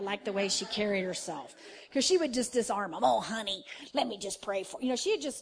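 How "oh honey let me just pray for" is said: relaxed, disarming delivery. Retelling how a late evangelist used to talk: imitating Frances Hunter's voice. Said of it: "she had that voice".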